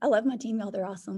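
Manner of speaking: rushed, choked-up, emotional outpouring. Speaker praising and thanking their team: getting emotional. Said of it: "I'm getting emotional".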